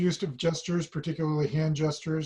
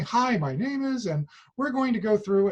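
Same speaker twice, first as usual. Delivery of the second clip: acted bouncy, high, heavily inflected sing-song; 6 semitones higher than usual. Giving an example of a guest teacher who came in bouncing, imitating a bouncy, inflected voice. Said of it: "very bouncy, lots of inflection in her voice".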